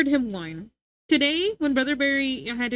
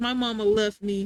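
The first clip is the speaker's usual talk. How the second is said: put-on dog voice, lower; 3 semitones lower than usual. Retelling how her dog acted after being left alone: voicing her dog. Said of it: "He's like".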